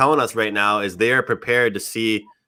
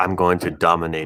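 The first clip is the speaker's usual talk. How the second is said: very relaxed, utterly easy, low delivery; 5 semitones lower than usual. Two people hyped for an upcoming fight; relaxed Khabib impression. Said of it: "the most like relaxed person I've ever heard".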